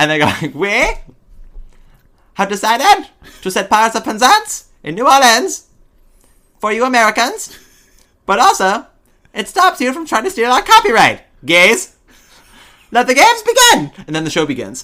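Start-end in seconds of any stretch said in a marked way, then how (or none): 0.5-14.0 put-on very high, shrill, loud, drawn-out cartoon boy voice. Speaker describes a show's opening to a friend; Terrence and Phillip voice. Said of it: "It's Terrence and Phillip do the Knights".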